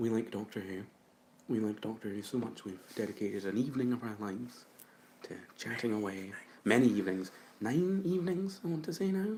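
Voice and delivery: speaking in a hushed whisper. Speaker introducing a Doctor Who chat before recording it, whispering. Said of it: "I don't know why I'm whispering still".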